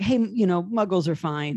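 ordinary talk, nothing marked

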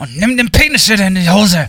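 discreet, spoken through gritted teeth. Acting out a parent scolding a child in public: imitating a parent talking through teeth. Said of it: "man redet ja so".

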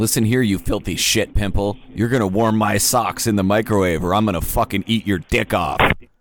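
mock-angry, put-on hostile rant. Calling as Caleb and threatening Anki before deciding to be nice, mock-angry threat. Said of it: "gotta be nice".

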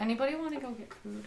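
quiet, soft, soft-spoken voice. Redoing a character's line about getting food: quiet, soft-spoken in character. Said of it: "Zadie would have quietly just said".

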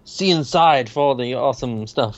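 ordinary delivery

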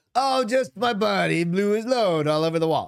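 fake Saudi accent. Imitating the cops dismissing the mess: put-on Saudi accent sounding Italian. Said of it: "You sounded more Italian than Saudi Arabia".

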